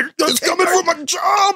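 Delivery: put-on high, slow wailing crazy old man doomsayer voice.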